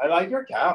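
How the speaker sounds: put-on accent from South Asia.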